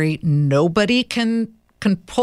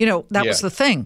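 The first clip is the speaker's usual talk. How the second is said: plain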